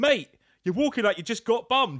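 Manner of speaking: very high, loud, hollered heckling shout. Retelling what a man shouted at another man down the road: imitating a man shouting. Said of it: "He just shouted".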